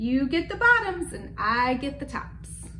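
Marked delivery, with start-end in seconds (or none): none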